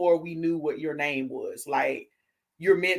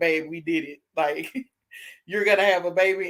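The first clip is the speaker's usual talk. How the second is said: happy, tearful crying voice, calling out through tears. Retelling calling her husband with the news, retelling crying on the phone. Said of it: "I called him like crying".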